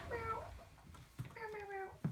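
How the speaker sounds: high, soft meowing cat sounds.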